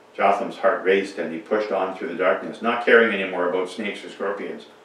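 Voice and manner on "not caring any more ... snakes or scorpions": ordinary delivery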